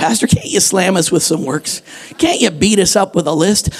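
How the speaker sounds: usual speaking voice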